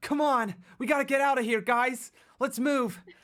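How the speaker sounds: very high, loud, cliché anime hero voice. Showing his go-to voice for anime roles, cliché anime main guy voice. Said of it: "my anime go to, like, ... sounds like every cliche main guy in an anime kind of voice".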